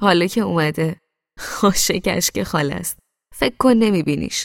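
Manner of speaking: laughing through the words. [name] answers Mohammad's complaint about their guest, laughing. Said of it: "با خنده گفت".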